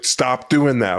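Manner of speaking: put-on yelling woman's voice. Retelling how she was yelling: imitating Ann yelling. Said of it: "she was yelling at me".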